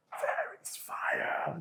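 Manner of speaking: breathy, alarmed stage-whispered shout. Retelling how a passenger saw the engine on fire: imitating a shout. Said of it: "Il crie comme ça".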